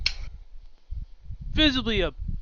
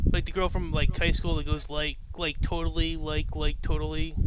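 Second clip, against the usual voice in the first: ordinary talk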